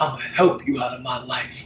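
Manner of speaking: put-on voice breaking, close to crying. Imitating a mom who is about to cry: imitating mom's voice breaking. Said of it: "she had that break in her voice".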